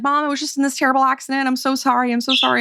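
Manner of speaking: sobbing, crying, frantic, panicked voice. Retelling a call where a panicked daughter phones her mom, imitating her crying in panic. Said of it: "her daughter's like freaking out and she's crying".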